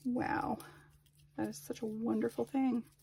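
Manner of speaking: sarcastic, impressed-sounding tone. Remarking on the dogs helping today, sarcastic. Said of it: "I say sarcastically".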